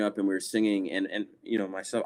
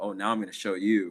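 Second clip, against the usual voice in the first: stubborn, defiant attitude; 5 dB quieter than usual. Retelling a younger self's reply to a mother: imitating own stubborn attitude. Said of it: "in my stubborn sort of attitude".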